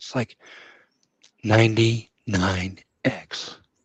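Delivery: quiet monotone whisper. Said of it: "very kind of monotone, kind of whispery".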